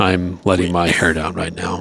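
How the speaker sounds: seductive-sounding coach voice. Imitating Bill Belichick addressing players after a game: Bill Belichick impression. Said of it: "that's just, uh, Bill Belichick".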